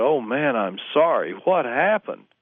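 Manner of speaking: sympathetic, consoling, slow, compassionate tone. Retelling the fan's reaction to the news: imitating a compassionate fan. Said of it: "with compassion".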